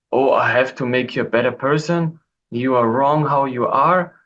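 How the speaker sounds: plain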